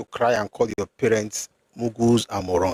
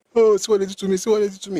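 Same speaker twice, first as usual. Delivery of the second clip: put-on sobbing, high, whiny fake crying; 10 semitones higher, 3 dB louder than usual. Imitating people who complain about the past: mock crying. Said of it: "These ones do it to cry".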